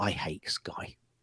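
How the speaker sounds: quiet, slow whispering.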